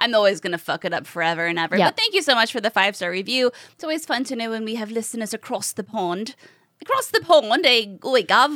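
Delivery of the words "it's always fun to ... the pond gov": bad, fake put-on British accent. Podcast host thanking a listener from across the pond: bad british accent. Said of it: "I don't know what the hell that accent was".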